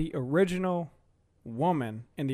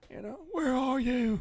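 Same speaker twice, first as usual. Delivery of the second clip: very high, scratchy, raspy voice; 10 semitones higher than usual. Describing how a movie character talked, imitating his raspy voice. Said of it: "He had a really raspy voice like this".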